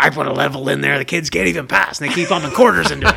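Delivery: raspy cigarette-smoker voice. On the show, recalling a Wayne's World scene, raspy Noah impression. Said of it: "like that raspy cigarette smoking voice".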